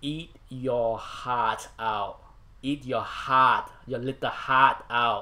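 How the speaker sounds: loud, fake, put-on Boston accent. Joking about a comic book's Boston pedigree: put-on Boston accent. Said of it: "That's my Boston accent".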